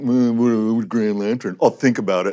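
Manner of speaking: mock grumbling. Actor recalling his reaction to being offered Green Lantern, retelling a grumble.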